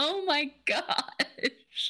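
high, slow, stunned disbelief. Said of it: "And I was like".

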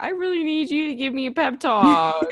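high, loud, desperate delivery.

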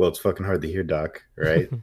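put-on tough, blunt, badass delivery. Retelling a character's reply to a doctor: imitating a badass delivery. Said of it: "he said it in a very, like, badass way".

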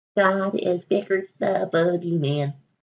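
slow, awkward cartoon voice. Doing a viewer-requested impression, a Junior impression attempt. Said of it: "This is just the best um Junior voice I can do".

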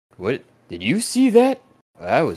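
very high, baffled voice. Narrating the scene, voicing onlookers staring after a bloody specter, baffled. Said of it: "they're just kind of staring after it like".

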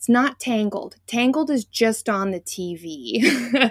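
put-on very stern, slow, no-nonsense tone. Retelling how a niece sternly corrected which princess is Rapunzel: imitating a niece's stern correction. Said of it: "looks at me with a very stern face and goes".

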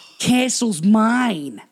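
loud, bad New York gangster accent, "mine" drawn out. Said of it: "shitty New York gangster accents in this film".

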